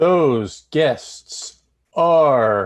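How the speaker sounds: very slow, loud, drawn-out stretched words. Asked who the book chat guests are, answering very slowly. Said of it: "he says very slowly".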